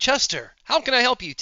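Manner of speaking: synthetic robotic helper-bot assistant voice. Voicing a robotic face on a TV greeting the player: robotic AI assistant voice. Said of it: "blue robotic face that's like".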